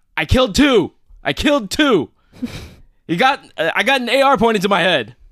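shrill, very high, loud shouting. Retelling what the listener yelled on an accidental 911 call, retelling a yell. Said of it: "you're yelling out".

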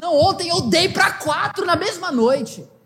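put-on high, proud, boastful girlish voice. Retelling what a girl says to the preacher: imitating someone bragging. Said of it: "e se orgulha".

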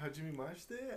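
strong accent in Japanese. Trying a Japanese greeting when asked to say something in Japanese: strong accent in Japanese. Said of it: "Can you say it with less of an accent?".

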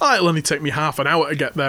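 normal talking voice

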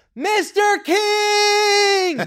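shrill, very high, all-out yell with drawn-out word. Recounting the moment he yelled a name in a parking lot: retelling a yell at full lungs. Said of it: "I just yelled at the top of my lungs".

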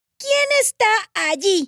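loud, very high, forced-brave call. Someone frightened calls out to whoever hides among the flowers, loud, trying to be brave. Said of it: "preguntó con voz fuerte, tratando de ser valiente".

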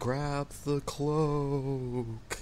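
over-dramatic ghostly voice. Recapping the last session, retelling a player's line, over-dramatic spectral voice. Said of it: "in a very over-dramatic, spectrally voice".

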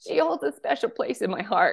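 on the verge of crying. Introducing a friend from earliest memories, the speaker is choking up, near tears. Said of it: "I'm going to cry".

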